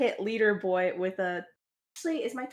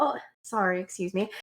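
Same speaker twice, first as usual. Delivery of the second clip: woozy, dizzy, disoriented, muddled voice; 3 semitones lower than usual. Player describing their character's move, acting dizzy. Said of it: "move around like dizzy and be like".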